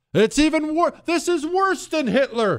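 very high, shrieking, mock hysterical panic.

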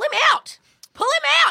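shouting.

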